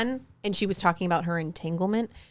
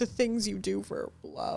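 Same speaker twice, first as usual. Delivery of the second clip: acted weepy, tearful speech as if crying; 2 semitones higher, 8 dB quieter than usual. Retelling an award-night speech, imitating Will crying. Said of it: "And he's crying up there, and he's like".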